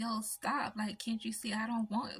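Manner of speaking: mock, desperate begging tone. Retelling a man hollering for others to stop: imitating someone begging. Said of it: "begging for them to stop".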